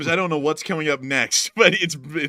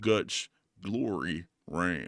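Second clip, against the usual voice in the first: very deep, very soft, hushed commercial announcer voice; 9 semitones lower, 10 dB quieter than usual. Answering a listener's comment, the speaker repeats the tagline in the Dodge Ram commercial voice. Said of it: "sounds like a Dodge Ram commercial voice guy".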